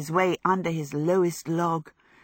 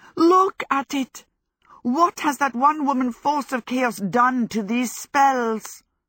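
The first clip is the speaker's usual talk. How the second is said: despairing, high, wailing yell; 8 semitones higher, 4 dB louder than usual. Narrator reads Howl's line to Sophie and Michael: shouting. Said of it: "he shouted".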